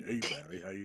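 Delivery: put-on really deep voice. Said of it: "I'd always try to imitate him, 'cause he's got that really deep voice".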